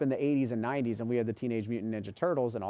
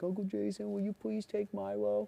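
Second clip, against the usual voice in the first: play-acted, very high, tearful child begging; 10 semitones higher, 4 dB quieter than usual. Retelling the nephew's plea to take Milo from the shelter, imitating Caleb crying. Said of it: "and he's crying".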